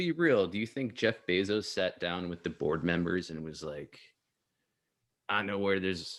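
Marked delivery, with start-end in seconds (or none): 5.3-6.2 put-on Southern American accent. Imagining Jeff Bezos talking with board members, southern accent as Jeff Bezos. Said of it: "I don't know why I started doing a southern accent".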